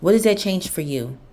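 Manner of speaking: irritation in voice. Telling the listener to stop dwelling on the past: irritation in voice. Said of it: "I apologize if I have irritation in my voice".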